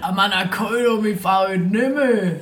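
put-on thoroughly broad Swabian accent. Acting out a conversation that was overheard, in a broad Swabian accent. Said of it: "Aber richtig schwäbisch".

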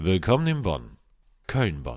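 put-on voice-over announcer delivery. His classic line whenever he's here, done in his announcer voice. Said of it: "jetzt kommt wieder meine Sprecher".

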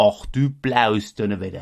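regional Saxon accent. Asked for a sample, says an exclamation in Saxon: Saxon accent. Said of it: "heißt auf Sächsisch".

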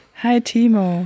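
warm, airy delivery with lots of breath. Greeting at the start of a podcast: warm, breathy greeting. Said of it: "Eine warme Sendung. Mit viel Atemluft".

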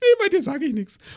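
very high, sweet, squeaky cartoon voice. Speaker retells what a man suddenly told him, in a sweet SpongeBob voice. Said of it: "so eine Stimme rausgehauen, aber so richtig süß".

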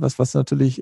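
ordinary delivery

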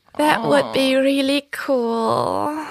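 high, slow, lingering, drawn-out way of talking. Describing how Carla always talks, imitating Carla's voice. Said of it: "weil sie redet immer so".

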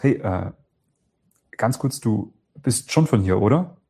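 slightly bewildered, hesitant, stuttering a little, with a pause. Asking someone if they're from here, slightly confused and hesitant. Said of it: "So verwirrt, ein bisschen leicht verwirrt mit so ein bisschen Stottern, so einer Pause".

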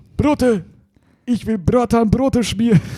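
very high, angry outburst, spat out. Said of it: "[name] sagt ganz sauer".

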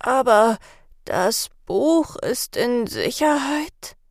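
feeble, tired, weak, faint voice. The mistress, recovering from a sedative, asks Sarah and Kalle, in a weak voice. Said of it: "fragte sie mit schwacher Stimme".

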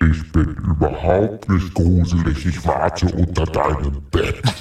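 deep, spooky put-on voice. Asked by a co-host to do the deep voice, the speaker answers in a deep spooky voice. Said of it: "jetzt kannst du mal die tiefe Stimme machen und einmal gruselig sagen".

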